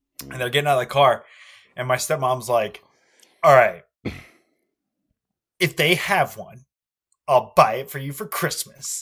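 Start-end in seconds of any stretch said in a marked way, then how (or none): 3.4-9.0 dry, mocking, snarky sarcastic tone. Retelling what a stepmom said to dad outside Sportsman's, imitating someone being sarcastic. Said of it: "being all snarky and sarcastic".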